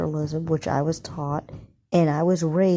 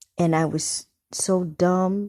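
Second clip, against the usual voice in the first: ordinary talk, nothing marked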